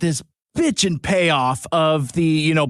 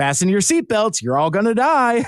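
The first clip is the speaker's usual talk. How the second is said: mock upbeat, friendly announcer voice; 4 semitones higher than usual. Describing the subway announcer's voice on a podcast, imitating upbeat friendly delivery. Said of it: "friendly delivery".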